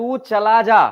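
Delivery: angry and loud, stress on "la" of "chala". Explaining word stress in an angry command: angry, stress on 'la'. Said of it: "गुस्सा में बोल रहा है तू चला जा".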